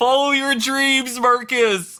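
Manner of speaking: high-pitched cheering yell. In a game, as their character gets sucked away, calling back to another, yelling. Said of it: "I want to yell".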